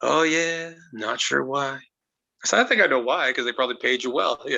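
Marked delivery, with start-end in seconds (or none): 0.0-1.8 very slow, stoned-sounding, drawn-out drawl. Retelling a phone call, doing Roddy Piper sounding stoned. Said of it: "he always sounded three joints in".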